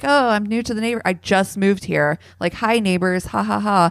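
light, playful, jokey delivery with a laugh. Retelling how a woman at a police scene joked: imitating someone laughing and joking. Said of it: "she's kinda, like, laughing, like, joking".

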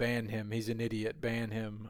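ordinary delivery

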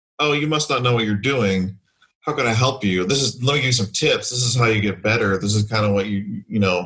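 mock condescending, patronizing voice. Retelling how gamers react to a girl on voice chat: imitating a condescending simp gamer. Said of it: "a simp kind of thing".

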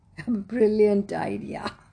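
laughing while speaking. Reading a story, voicing the brothers answering Soorapadman's plan, laughing. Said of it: "they laughed".

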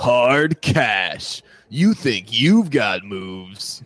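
put-on movie voiceover guy voice. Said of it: "a really good, uh, voiceover guy voice".

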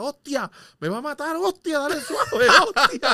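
very high, shrill, very loud yelling. Retelling what a buddy shouted from the bed, retelling a man's shouting. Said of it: "lo que gritaba era".

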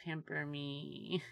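tiny, clamoring, needy voice, high and soft. On a hypnosis podcast, acting out a request in a put-on tiny needy voice. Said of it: "this like tiny clamoring needy voice".

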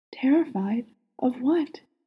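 soft, quiet voice. Aziraphale pulls back to see Crowley's face after his confession, soft voice. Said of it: "His voice is soft".

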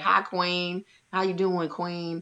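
patronizing, disrespectful, condescending tone. Imitating people who call someone queen: imitating a condescending greeting. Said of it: "it's condescending".

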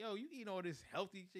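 playful, joking, teasing tone. Retelling what you said to a coworker when you first met him; retelling own teasing. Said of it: "I was teasing him".

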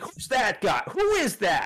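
put-on acted grandpa hollering, very high, swinging, swooping pitch. Retelling a grandfather watching Jeopardy: imitating grandfather yelling. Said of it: "yelling at my dad. He's like".

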